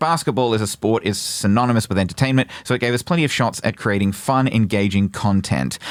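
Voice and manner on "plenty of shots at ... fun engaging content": ordinary talk, nothing marked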